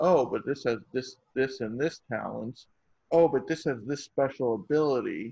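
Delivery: plain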